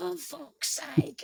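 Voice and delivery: hushed, breathy put-on British accent. Speaker trying out a woman's accent after being told to commit: very British accent. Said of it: "that's the most British person I've ever heard in my life".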